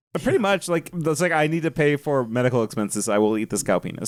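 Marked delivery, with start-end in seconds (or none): none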